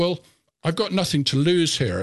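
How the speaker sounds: ordinary delivery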